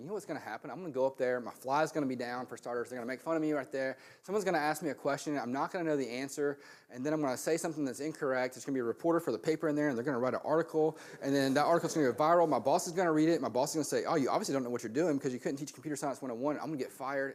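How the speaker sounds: ordinary delivery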